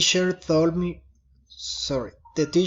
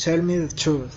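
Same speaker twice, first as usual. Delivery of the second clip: falling intonation, pitch dropping on truth. Example of a command: falling intonation at the end. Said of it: "falling intonation".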